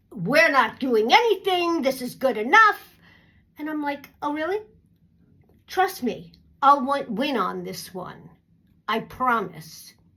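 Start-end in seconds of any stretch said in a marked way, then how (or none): 0.2-2.8 put-on nasty, unpleasant tone. Complaining about a company, the speaker imitates the nasty one's reply. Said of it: "the nasty one is like".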